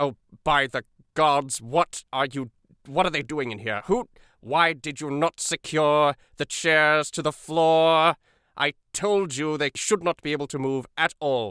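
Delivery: loud, slow, exasperated angry voice. Voicing a figure who scolds an underling about unsecured chairs: loud angry voice. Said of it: "somebody loudly say".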